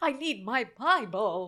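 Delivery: put-on panicky voice, clearly enunciated. Retelling a woman asking for her Bible, the speaker mimics her enunciated fake panic. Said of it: "so enunciated and like fake panicky".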